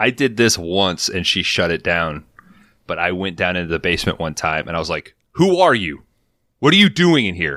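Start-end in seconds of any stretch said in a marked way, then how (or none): 5.3-7.6 mock yell, raised and high-pitched. Retelling yelling at someone down in the basement, retelling a yell. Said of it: "I just started to yell that".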